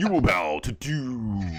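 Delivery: very slow, regal, metallic, stately voice. Showing how a comic villain is imagined to sound: regal metallic Doctor Doom voice. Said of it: "kinda regal, but, you know, with, like, a metallic voice".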